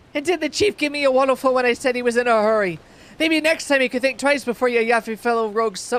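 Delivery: very loud, very shrill, high Irish pirate brogue. Speaker voicing a pirate before explaining how pirates sound, in an irish pirate accent. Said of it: "the pirate sounds Irish".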